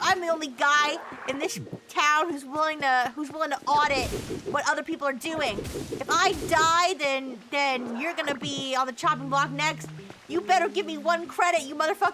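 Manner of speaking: ordinary talk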